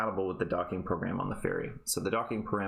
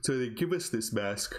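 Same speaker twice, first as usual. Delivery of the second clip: speech spoken mid-yawn; 3 semitones higher than usual. Explaining a programming puzzle to an audience, talking through a yawn. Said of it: "Sorry, I'm yawning".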